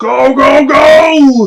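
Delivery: high shouting goblin voice, drawn-out go. A game master voices a goblin urging a giant on: goblin yelling. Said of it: "The goblin yells out".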